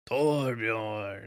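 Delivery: torbjorn with extra punch. Coaching the other speaker to say a name better, saying Torbjorn with more oomph. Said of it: "Do it with more oomph".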